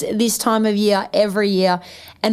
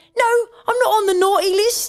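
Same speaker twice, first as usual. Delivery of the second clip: squeaky, very high little English boy, put-on accent; 11 semitones higher than usual. Describing a favourite Christmas video, the speaker imitates the little English kid in it. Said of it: "that little English kid who's like".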